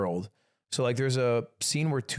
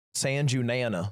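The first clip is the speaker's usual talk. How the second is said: put-on American accent. Repeating a Japanese phrase on request; American accent. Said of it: "You want me to say it with an American accent?".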